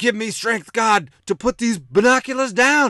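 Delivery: very high, loud, frantic, freaking-out shriek, acted out. Retelling what a man said while looking through binoculars: retelling a scream. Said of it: "He's screaming".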